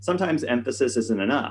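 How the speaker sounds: ordinary talk, nothing marked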